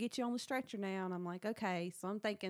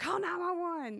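put-on demon voice, much higher; 10 semitones higher, 5 dB louder than usual. Retelling telling a man in the car to call 911, demon voice. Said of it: "my like demon voice".

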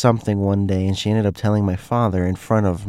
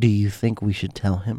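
put-on low whisper; 3 dB quieter than usual. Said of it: "in a low whisper-esque voice".

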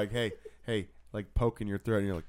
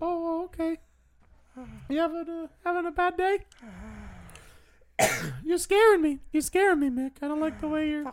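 very high, squeaky, girly cartoon mouse voice. Acting out a scene with an upset Mick, Minnie Mouse voice. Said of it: "but it's just like a little girlier".

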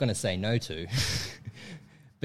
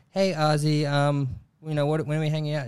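put-on American accent, pitched up; 5 semitones higher than usual. Retelling a girl's message asking when they're hanging out: imitating an American accent. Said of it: "she spoke in an American accent".

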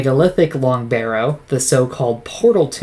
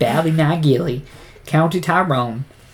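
put-on bumpkin accent, much higher pitch; 3 semitones higher than usual. Showing a co-host how a place name must be said, country bumpkin accent. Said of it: "you gotta say it like you're a country bumpkin".

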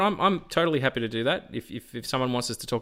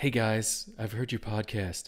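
put-on sexy voice, quieter; 3 semitones lower, 6 dB quieter than usual. Imagining a comics artist calling the podcast: imitating Jim Lee in a sexy voice. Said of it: "Why does he sound sexy?".

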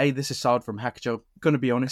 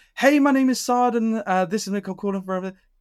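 very high, disingenuous, insincere sales voice; 10 semitones higher, 4 dB louder than usual. Explaining inflection in cold calling, demonstrating a bad opener: disingenuous cold-call tone. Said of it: "you sound disingenuous".

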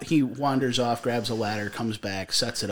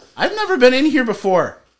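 mock defensive protesting, raised and high; 9 semitones higher, 9 dB louder than usual. Retelling a shopkeeper throwing someone out of the shop: imitating defensive denial. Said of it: "He's all defensive".

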